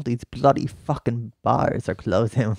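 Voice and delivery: clumsy, slow, bad put-on British accent. Speaker tries an accent they admit is not good: bad british accent. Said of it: "My British accent's not good".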